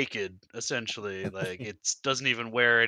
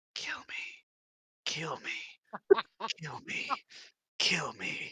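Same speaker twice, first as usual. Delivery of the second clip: soft, breathy whisper, repeated over and over; 6 semitones higher, 5 dB quieter than usual. Game master voicing an angel speaking in a player's head, soft voice. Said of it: "You hear a soft voice repeating over and over".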